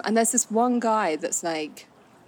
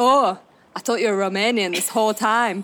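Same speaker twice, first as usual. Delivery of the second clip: loud, terrible put-on northern English accent; 2 semitones higher, 5 dB louder than usual. Retelling a girl's reply after hearing she's from London, in a bad northern English accent. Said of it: "That was a terrible accent".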